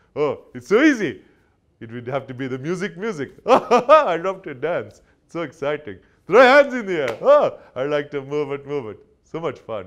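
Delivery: belted loudly with pitch swooping all over. Answering a question put to King Julian, in King Julian voice. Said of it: "it's such a fun voice, King Julian".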